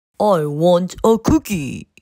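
big, deep, grown-up put-on voice. Reading a children's story, the narrator voices Alfie in a big, deep voice. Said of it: "said Alfie in a big, deep voice".

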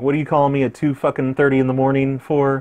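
normal talking voice

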